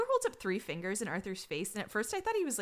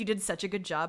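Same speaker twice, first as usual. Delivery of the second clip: ordinary talk, nothing marked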